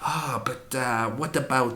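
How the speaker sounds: soft, hushed, deliberately very bad French accent. Quoting Ruja without an Iranian accent, in a very bad French accent. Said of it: "this is a very bad French".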